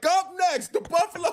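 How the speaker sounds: put-on, very high, all-out screaming announcer call. Describing how the beard is screaming at them, imitating someone screaming. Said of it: "He's like".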